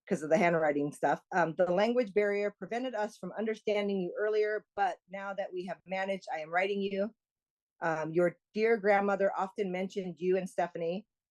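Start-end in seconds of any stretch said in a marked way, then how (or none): none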